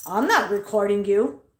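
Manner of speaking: theatrical, dramatic, sarcastic delivery. Retelling a worker's denial of recording, imitating Lisa's dramatic sarcastic reply. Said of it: "you don't have to go all dramatic and sarcastic at me".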